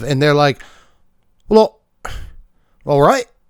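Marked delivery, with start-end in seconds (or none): 1.5-3.2 fake British accent, much higher pitch. Acting out a silly exchange where troops answer their leader, fake british accent. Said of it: "I keep doing the British thing today".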